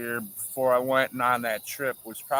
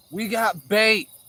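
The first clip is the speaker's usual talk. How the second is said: play-acted excited holler, high pitch and loud; 9 semitones higher, 6 dB louder than usual. Retelling your buddy yelling at you at Kentucky Lake: retelling a yell. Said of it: "he's yelling at me".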